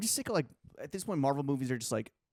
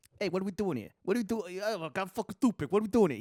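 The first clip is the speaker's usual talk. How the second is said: put-on New York accent, pitched higher; 7 semitones higher than usual.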